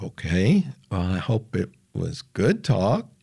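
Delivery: plain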